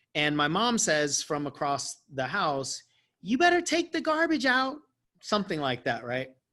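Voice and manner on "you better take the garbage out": very high, little witchy voice. Retelling mom calling from across the house, in a little witchy voice. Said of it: "like a little witchy voice".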